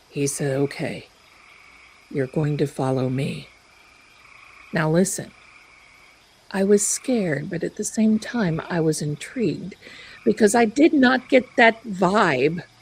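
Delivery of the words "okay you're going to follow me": mock droning monotone, voice much lower. Retelling what a man who got up from the table said: imitating a low monotone voice. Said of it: "this low monotone voice that he speaks".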